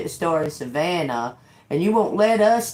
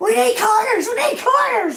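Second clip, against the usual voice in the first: put-on, very high, panicky outburst; 3 dB louder than usual. Retelling what they said to a man who was mad, acting panicky. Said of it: "I started acting like all panicky".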